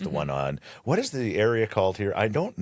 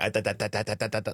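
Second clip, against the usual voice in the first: mock excited stuttering child voice, higher pitch; 6 semitones higher than usual. Imitating a kid from a video who is too excited to talk: imitating an excited stuttering kid. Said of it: "that little kid that gets so excited and he just keeps stuttering".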